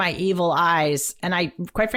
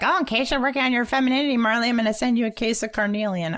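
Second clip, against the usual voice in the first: mock, snarky, high put-on tone; 5 semitones higher than usual. Imitating the other speaker's advice with a smile: imitating someone snarkily. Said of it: "I love how you have that snarky".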